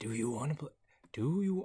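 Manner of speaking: fumbled attempt at a horror-villain voice. Spotting Jigsaw in the game, the speaker tries his voice: Jigsaw voice. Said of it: "how do you do his name? Or his name, his voice".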